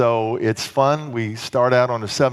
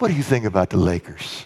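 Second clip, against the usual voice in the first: put-on serious tone, pitched much lower; 5 semitones lower than usual. Retelling the pastor's question during a difficult discussion, imitating Pastor James's serious tone. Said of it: "he'll get to a real serious tone".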